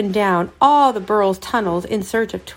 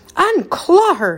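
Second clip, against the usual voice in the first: stern, high, raised shout; 8 semitones higher than usual. Major Puff calls across the river to the gull holding Twitch, shouting. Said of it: "Major Puff shouted across the river".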